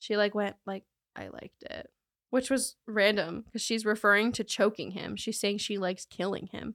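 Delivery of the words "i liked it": low, breathy, dropped-voice whisper. Retelling what she said to investigators: imitating a lowered voice. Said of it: "she dropped her voice and said".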